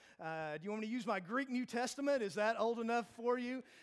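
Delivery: snarky tone.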